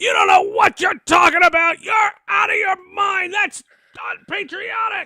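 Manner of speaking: acted, shrill, very high, loud top-of-the-lungs screaming. Recalling a man screaming from the back of the room, imitating Tommy Lasorda screaming. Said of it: "this guy screaming at the top of his lungs".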